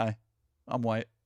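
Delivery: play-acted baffled, bewildered, puzzled delivery. Retelling what the man in the video said: imitating a confused tone. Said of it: "He just sounds confused".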